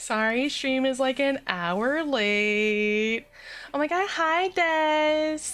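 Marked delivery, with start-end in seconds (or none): 3.7-5.4 put-on high Valley Girl voice with long drawn-out word. A streamer greets a viewer at the start of a late stream, Valley Girl voice. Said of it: "That is not my best Valley Girl impression".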